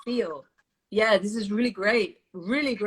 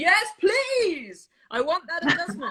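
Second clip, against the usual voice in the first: loud, strong, emphatic, full-voiced, pitched up; 8 semitones higher than usual. Showing what enthusiastic consent sounds like from a student: loud, strong voice. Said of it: "in a loud, strong voice".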